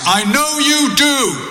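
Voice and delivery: loud very high-pitched voice. Retelling what the speaker's dad said to them, loud voice. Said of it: "in a loud voice".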